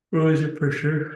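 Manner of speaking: words through a yawn. Speaker explaining what happened on the last entry, talking through a yawn. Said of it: "Sorry, it's yawning".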